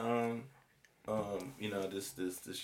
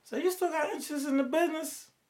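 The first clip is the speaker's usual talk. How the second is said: high female voice. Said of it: "it's a female voice".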